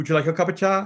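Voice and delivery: put-on quick, high, lilting sing-song Cork accent. Retelling a question said to their own mother, in a lilting sing-song Cork accent. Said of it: "in our beloved Cork accent".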